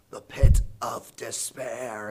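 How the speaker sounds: menacing gravelly rasp, dragged very slow, ominous. Retelling a scene where the albino man answers Wesley's question, ominous, gravelly voice. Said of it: "in this kind of ominous, gravelly voice".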